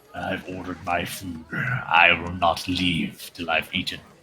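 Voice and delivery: very low, quiet, rumbling brute orc voice. In a tabletop game, an orc answers the bartender, orc voice. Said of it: "The [name], this orc, / and he looks at you and says".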